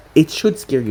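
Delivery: plain reading voice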